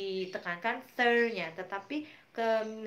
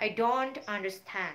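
heavy stress on the word "don't". English lesson on stressing negative words: stress on don't. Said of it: "kita stress yang down-nya".

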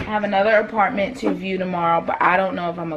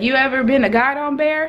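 put-on heavy, strong rural country accent; 6 semitones higher than usual. Retelling what a man asked him, in the strongest country accent. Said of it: "he had the strongest country accent ever".

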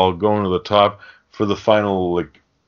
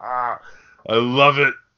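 high villain voice, laughing through the line; 5 semitones higher than usual. Describing a favorite movie scene, acting out the villain: imitating Lord of Darkness laughing. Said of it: "he starts laughing like".

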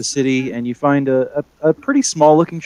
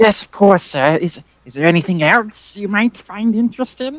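put-on wizened old witch voice, much higher; 7 semitones higher than usual. The witch at the shop desk answers a customer, wizened old witch voice. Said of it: "and at the desk there's a wizened old witch. She's got a large pointy hat and a big grin on her face".

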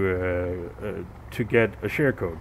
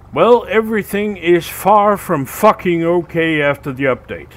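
very loud, seething, furious outburst; 7 semitones higher, 8 dB louder than usual. A player vents after a game update, really pissed off. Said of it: "I am really fucking pissed right now".

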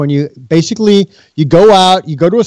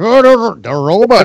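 mock pronunciation of "robot", higher; 3 semitones higher than usual. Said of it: "You sound like Zoidberg when you say".

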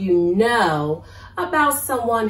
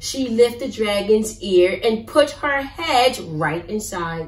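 plain

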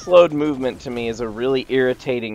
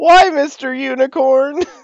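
mock sad tone, higher and louder; 5 dB louder than usual. Repeating another player's line after the unicorn scene: imitating a sad voice. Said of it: "She went".

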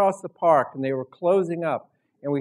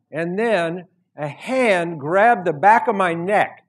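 ordinary talk, nothing marked

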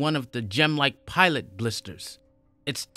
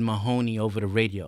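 ordinary delivery

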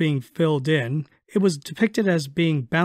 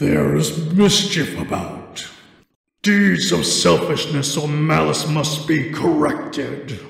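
deep, rough, low, menacing rasp. Reading a story, the narrator voices Krampus from the smoke: deep, menacing, booming. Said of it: "A deep, menacing voice boomed forth".

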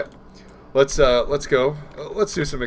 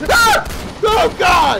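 very high, sudden, startled shriek of surprise; 6 dB louder than usual. Exploring a game area when a very loud rifle suddenly fires; startled scream. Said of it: "Sorry for screaming into the microphone there".

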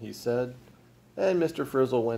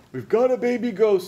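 pitched-up, loud shouting; 10 semitones higher, 4 dB louder than usual. Mr. Frizzle answers the police asking if he feels all right, shouted. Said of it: "shouted Frizzle".

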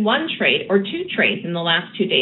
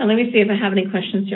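rushed, fast talk. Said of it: "Kind of feel like I'm talking fast here".

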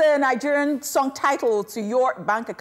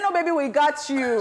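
usual speaking voice

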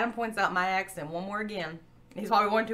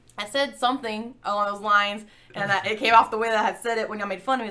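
ordinary delivery

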